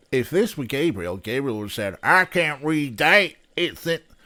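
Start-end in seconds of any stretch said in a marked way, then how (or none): 2.0-4.0 loud southern twang. Voicing Gabriel, who cannot read a sign: redneck accent. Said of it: "I keep doing this more redneck accent".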